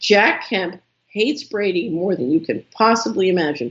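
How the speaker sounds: ordinary delivery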